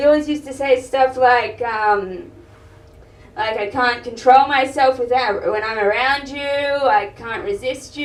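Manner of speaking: plain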